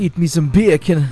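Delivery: put-on Jamaican accent. Joking about the nickname bacon, saying it in a jamaican accent. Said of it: "fun to say bacon in a Jamaican accent".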